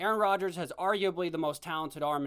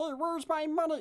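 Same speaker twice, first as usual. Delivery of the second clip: shrill, very high, grating frog voice; 10 semitones higher than usual. Mocking how a man talks when he walks around: imitating a grating froggy voice. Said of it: "His voice is like nails on a chalkboard".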